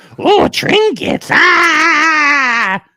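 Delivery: shrill, very high, loud goblin squeal. Telling another speaker to record himself sounding like a goblin, goblin voice. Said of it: "Really record yourself going".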